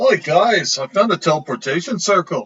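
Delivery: put-on bad Scottish accent. Playing a character greeting the others, bad Scottish accent. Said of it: "apologize to any actual Scottish listeners".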